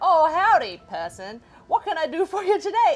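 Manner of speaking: very loud, swooping cowboy voice. Retelling how a phone voice agent set to a cowboy greeted a caller, in cowboy voice. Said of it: "the cowboy voice agent".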